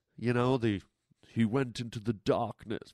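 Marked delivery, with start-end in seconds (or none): 1.3-2.9 dramatic poetry-reading delivery, quieter. Recalling own reading of a poem aloud: imitating own dramatic reading. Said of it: "forgive me for the dramatic readings".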